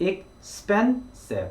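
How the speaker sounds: second syllable "pen" of "expensive" punched. Explaining the stress mark in the word expensive, stress on 'pen' in expensive. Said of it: "span에 좀 더 강조를 해서 소리를 내어주면".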